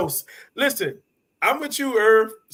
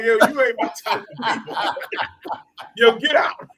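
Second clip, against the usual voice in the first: mock ticked-off, irritated, dismissive tone. Retelling how JC reacts if she isn't with it: imitating JC being mad. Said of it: "he mad".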